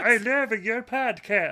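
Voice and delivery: put-on Irish accent. Redubbing a meeting with a podcaster in different accents, now an Irish accent. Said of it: "But make it Irish".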